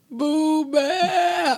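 very high crying wail, word Bear stretched out. Recounting how he cried for Blue Bear at the baby gate, imitating crying. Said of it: "But he would really be crying".

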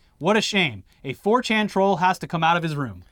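ordinary talk

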